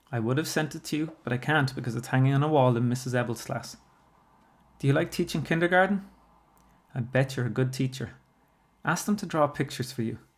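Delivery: ordinary delivery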